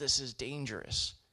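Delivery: ordinary delivery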